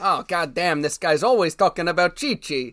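put-on Italian man voice. Joking about a phone that keeps hearing the same name, as Siri as an Italian man. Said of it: "Siri's an Italian man".

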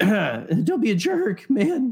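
very slow, high, drawn-out, cracking voice. Repeating a line about religion when the voice suddenly cracks: voice cracking. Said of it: "My voice just started doing that".

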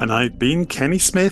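name lifted with a rising, question-like lilt. Signing off the show, copying the co-host's rising, question-like intonation on his name. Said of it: "So I thought I'd join in and question myself".

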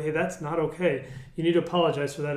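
ordinary talk

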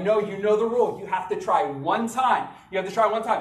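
ordinary delivery

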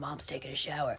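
deep, low, quiet, soft superhero voice. A mom tells her family about her shower after a hard day, in a Batman voice. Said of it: "With the Batman voice".

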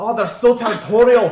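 put-on very loud, high-pitched Scottish accent slipped in. A game master voicing a captain meant to be Australian, in an accidental Scottish accent. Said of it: "That's still Scottish".

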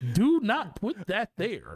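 high, funny voice with swooping, swinging pitch. Joking about doing a funny voice while putting a PC together, in a Yoda voice. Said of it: "talk like Yoda".

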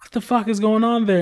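mock angry, heated woman's voice. Retelling a mother calling to ask why the kid is late: imitating an angry mother. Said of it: "getting mad as fuck".

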